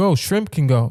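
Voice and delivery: ordinary talk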